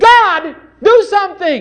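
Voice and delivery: loud belly shout, pitched high. Showing how a desperate prayer should sound: shouted from the belly. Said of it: "it must come right out of your belly".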